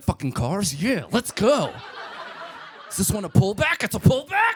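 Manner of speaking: wired, hyper fake excitement, high and swooping. Imagining playing with a toddler son after cocaine, pretending to be high on cocaine. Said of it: "I'd be like".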